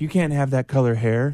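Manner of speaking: ordinary delivery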